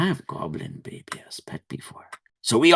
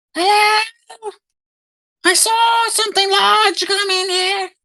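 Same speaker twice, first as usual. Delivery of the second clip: tiny, high-pitched goblin voice; 4 dB louder than usual. Narrating a scene where a voice calls in at the barn door; little goblin voice. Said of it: "like a little goblin voice".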